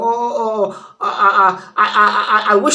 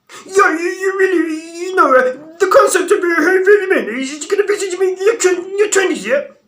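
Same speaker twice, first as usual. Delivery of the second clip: goofy voice, pitched very high; 9 semitones higher than usual. Doing an impression of Troy Francis with a goofy-sounding voice. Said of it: "That's Troy Francis, by the way".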